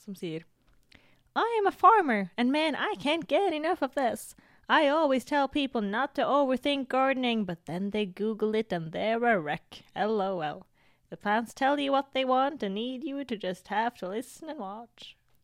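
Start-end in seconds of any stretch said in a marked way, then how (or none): 1.3-15.1 fake Southern US accent, higher pitch. Reading out a commenter's message from a farmer, in a put-on Southern US accent. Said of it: "Jeg liker at du ga denne personen en sørstatsaksent".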